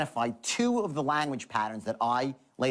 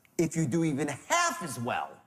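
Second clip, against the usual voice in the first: totally sure, unwavering, with swooping tune; 2 semitones higher than usual. Demonstrating a tonal pattern for closing to the program's people, with absolute certainty. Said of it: "absolute certainty".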